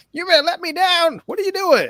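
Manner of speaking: squeaky helium-like voice, very high and loud. Imitating a movie character's line: Evil Bong on helium voice. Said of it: "this sounds like Evil Bong on Helium".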